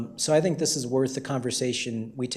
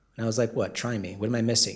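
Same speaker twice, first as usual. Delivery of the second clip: ordinary talk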